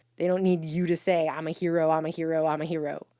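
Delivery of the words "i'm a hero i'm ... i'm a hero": usual speaking voice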